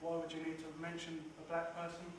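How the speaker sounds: usual speaking voice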